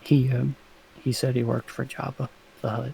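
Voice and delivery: very low, very quiet murmur. Answering a question about why a guy was threatened, speaking quietly. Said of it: "Are you whispering this, or are you just saying it quietly?".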